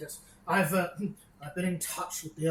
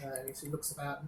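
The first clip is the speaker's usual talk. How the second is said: ordinary delivery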